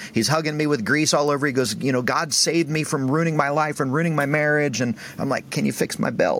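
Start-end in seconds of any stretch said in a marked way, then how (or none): 1.8-4.8 weepy, tearful voice through sobs. Retelling a man who was crying and hugging the speaker: imitating a man crying. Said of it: "And he's crying".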